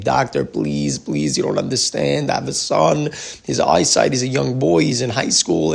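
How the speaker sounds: tearful, crying, begging and pleading voice. Retelling a mother kneeling before a doctor, imitating a crying plea. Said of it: "she's crying to him, begging him".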